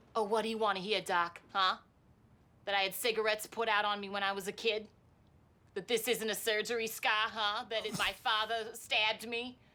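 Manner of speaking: put-on Brooklyn-accented delivery. Performing a scene line addressed to Doc, in a Brooklyn accent. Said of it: "You're speaking right now with a Brooklyn accent".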